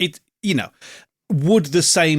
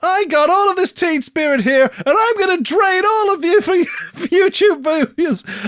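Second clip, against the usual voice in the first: words squeezed out slowly through very high giggles. Acting out a silly joke line while laughing while talking. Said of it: "I can't even get my fucking words out 'cause I'm laughing".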